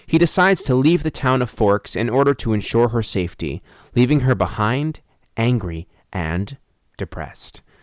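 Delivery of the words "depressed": "depressed" dropped low and soft. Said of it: "Emphasis on the depressed".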